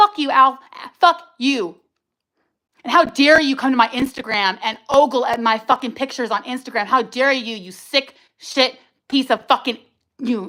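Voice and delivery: enraged, furious, very angry. Venting about Al after feeling judged by him for years, furious. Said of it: "I'm so angry".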